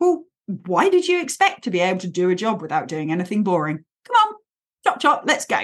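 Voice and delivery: fast, bossy, pragmatic, no-nonsense tone. Speaker demonstrating the inner voice they find useful, in a pragmatic bossy voice. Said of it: "a slightly pragmatic, bossy voice".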